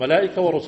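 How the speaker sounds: ordinary talk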